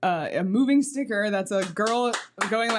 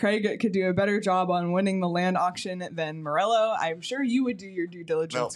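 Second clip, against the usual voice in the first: normal talking voice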